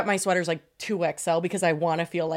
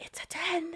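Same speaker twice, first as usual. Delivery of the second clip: very quiet, barely audible whisper; 7 semitones higher, 14 dB quieter than usual. Retelling telling the lady her shoe size: imitating her own whisper. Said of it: "I was, like, whispering".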